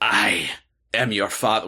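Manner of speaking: low, swashbuckling put-on pirate voice. Speaker saying a famous line to the group, pirate voice. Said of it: "Why am I doing a pirate voice?".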